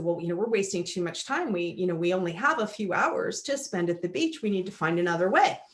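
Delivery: plain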